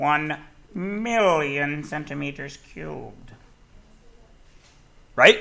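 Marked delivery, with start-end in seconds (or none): 0.0-3.3 slow, silly, funny put-on voice. Converting units in a maths lesson, said in a funny put-on voice. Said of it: "say it in a funny voice".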